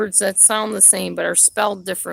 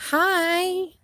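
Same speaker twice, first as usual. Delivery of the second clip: very high, sweet, syrupy nice-lady voice; 11 semitones higher than usual. Showing what the nice lady voice means, smiling nice-lady voice on 'hi'. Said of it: "the nice lady voice? Like when I smile and say, "Hi," like that".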